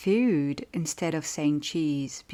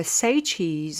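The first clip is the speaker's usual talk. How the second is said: ordinary talk, nothing marked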